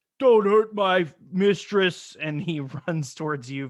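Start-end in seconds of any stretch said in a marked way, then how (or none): 0.2-2.2 high-pitched, very loud shout. The game master voices a farmer rushing to protect his mistress, shouting. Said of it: "he shouts".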